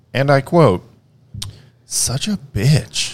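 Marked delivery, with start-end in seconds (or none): 1.9-3.2 sulky grumble, muttered off to the side. Retelling what a three-year-old daughter said to mom: imitating muttering under her breath. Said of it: "said under her breath to my wife".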